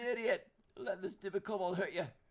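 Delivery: very loud, high-pitched, angry scolding shout. Speaking in character during a tabletop game turn: said loudly.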